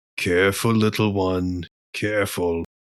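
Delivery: private aside spoken to himself only. Game master voicing Mogram as he mutters to himself, under his breath. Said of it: "under his breath".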